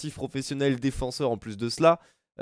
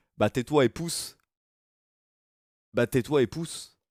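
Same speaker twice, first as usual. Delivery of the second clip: put-on, imitated Belgian accent. Retelling what Elena said during the challenge: imitating Elena's Belgian accent. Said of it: "Avec son accent belge".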